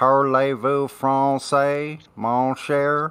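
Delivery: French in put-on East Texas accent. Trying out a French phrase in a put-on East Texas French accent. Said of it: "I was trying to do the the East Texas uh, Française".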